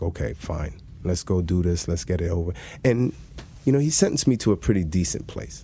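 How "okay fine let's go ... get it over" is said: usual speaking voice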